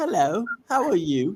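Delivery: put-on British accent, slow, high and drawn out. Retelling how a man talked in an interview: imitating a British accent. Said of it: "He was talking like".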